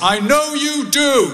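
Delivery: acted, loud, high, very slow drawn-out call. Retelling what dad called out as the speaker left the hospital ward: imitating a loud voice. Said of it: "I hear my dad say in a loud voice".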